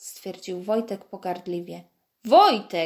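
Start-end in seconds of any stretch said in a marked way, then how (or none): 2.2-2.9 very loud, forceful yell. Coach Adam checks Wojtek after his scornful remark to the guest, warning shout. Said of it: "Krzyknął ostrzegawczo trener Adam".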